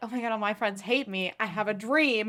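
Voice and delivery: ordinary talk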